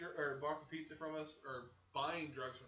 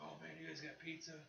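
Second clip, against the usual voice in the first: put-on stoned voice, quieter; 12 dB quieter than usual. Retelling a customer at a gas station asking about pizza: imitating a stoned guy. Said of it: "came in high as a kite and was like".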